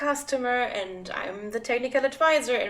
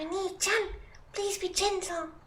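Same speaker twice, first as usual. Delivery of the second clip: put-on voice, much higher in pitch; 7 semitones higher, 6 dB quieter than usual. Unsure how to do it, trying a requested phrase in a high-pitched voice. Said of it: "What's a high pitched voice?".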